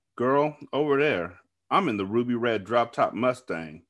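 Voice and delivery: ordinary delivery, nothing marked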